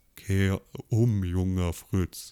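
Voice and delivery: low, deep rumble pushed out on exhaled vapor. Demonstrating the voice you get exhaling e-cigarette vapor: deep voice exhaling vapor. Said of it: "Du hast tatsächlich diese tiefe Stimme".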